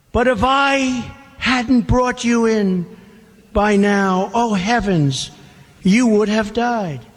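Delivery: plain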